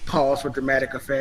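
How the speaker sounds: normal talking voice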